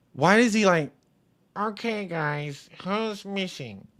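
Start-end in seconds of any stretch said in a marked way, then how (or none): 1.6-3.8 put-on high-pitched nasal voice, quieter. Mocking how a man changes his voice, high-pitched nasal voice. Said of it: "he went higher pitched and nasally".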